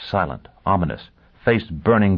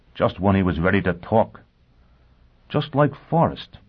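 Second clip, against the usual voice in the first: ordinary delivery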